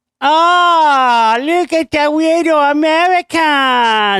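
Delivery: very high, very slow, drawn-out fake Chinese accent. Retelling someone's offensive bit, imitating Jones's mock Chinese accent. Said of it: "He's doing this like Chinese".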